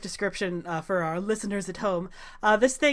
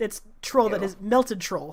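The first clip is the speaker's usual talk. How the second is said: ordinary talk, nothing marked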